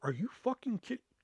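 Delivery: hushed put-on furious disbelief. After he writes a zero on the speaker's test, retelling pissed-off disbelief. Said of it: "So now I'm fucking pissed".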